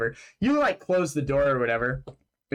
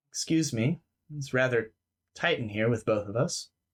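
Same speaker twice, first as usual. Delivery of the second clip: calm, close, courteous gentleman voice; 3 semitones lower, 3 dB quieter than usual. Voicing a creature speaking from inches away in the dark: calm gentleman's voice. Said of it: "a voice talking to you very calmly".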